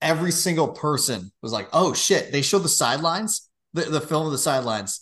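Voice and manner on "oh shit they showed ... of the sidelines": usual speaking voice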